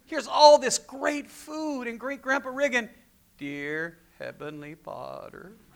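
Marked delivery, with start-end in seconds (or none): 3.4-5.5 very slow, very quiet, low murmur. Retelling great-grandpa Riggin saying grace before the meal, talking really slow. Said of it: "he'd talk really slow".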